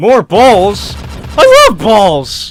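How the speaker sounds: horrible voice crack, high and loud. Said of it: "that was a horrible voice crack".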